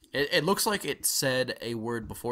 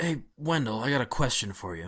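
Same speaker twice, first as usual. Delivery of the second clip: rather deep man's voice. Voicing a worker who asks Wendell a question: deep male voice. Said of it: "a rather deep male voice".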